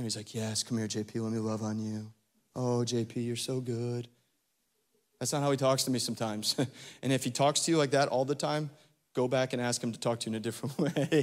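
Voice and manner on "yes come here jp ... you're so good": put-on tender, soft, slow, gentle voice. The speaker voices the imagined kind shepherd speaking to them, mock gentle voice. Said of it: "the picture of the good, kind shepherd".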